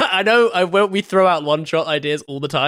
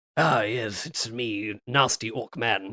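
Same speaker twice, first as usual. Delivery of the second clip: very quiet, very slow, snarling posh English accent; 8 semitones lower, 9 dB quieter than usual. Joking that some orcs would sound posh: snarly rp accent. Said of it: "a little snarly R P".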